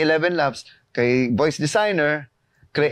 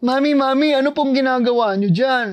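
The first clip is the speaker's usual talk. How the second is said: put-on high, small child character voice; 9 semitones higher than usual. Demonstrating a ready-made kid character voice, small child voice. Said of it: "voice one, kid. Boom! Aarte ako".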